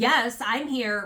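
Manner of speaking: voice dripping with attitude. Retelling how the debtor answered the trustee's roll call, imitating a snippy attitude. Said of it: "with an attitude again".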